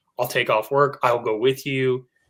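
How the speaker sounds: ordinary talk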